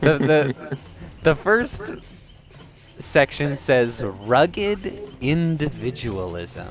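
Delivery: laughing through words. Reading out the first section of a list: laughing while talking. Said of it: "sorry, I'm laughing already".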